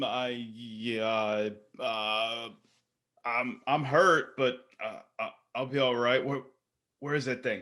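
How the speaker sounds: nervous, anxious, uneasy. In a role-played scene, a hurt character answers another's check-in after a tumble, nervous. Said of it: "nervously looking around".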